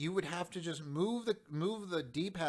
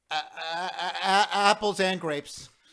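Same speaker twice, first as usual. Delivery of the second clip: put-on stammering voice, higher and louder; 3 semitones higher, 12 dB louder than usual. Retelling the end of a video: imitating Jontron stammering. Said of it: "Flashes to Jontron and he goes".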